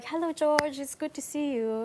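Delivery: put-on slight Chinese accent. Showing how they played the agent's requested slight accent: just a hint of accent. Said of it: "just with the hint of".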